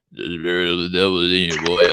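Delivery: put-on grunchy movie-actor voice. Quoting Sam Elliott in Ghost Rider after saying he's hard to understand, in a grunchy older Sam Elliott voice. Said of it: "had this even grunchier voice".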